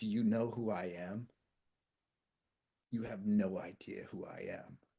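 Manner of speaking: mock snarling voice. Retelling what a collapsed man on the beach said to the speaker, imitating a snarl. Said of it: "he keeps snarling at me".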